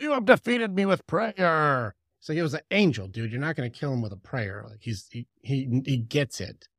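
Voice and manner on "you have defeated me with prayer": put-on devil voice, much higher and louder. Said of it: "And the devil's like".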